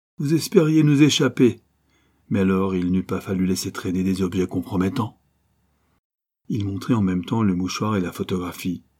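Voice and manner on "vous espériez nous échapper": high, loud, snickering, sneering jeer. A man appears in a narrow opening and confronts those who tried to escape, sneering. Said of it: "fit-il en ricanant".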